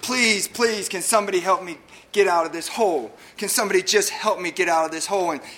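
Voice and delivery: acted-out, mimicked yelling. Telling a story of a man stuck in a hole, acting out a yell for help. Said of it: "he's yelling up out of this hole".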